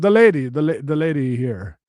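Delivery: put-on Ethiopian accent. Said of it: "I don't know how to do an Ethiopian accent".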